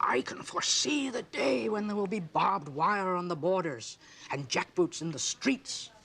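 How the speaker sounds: intense voice.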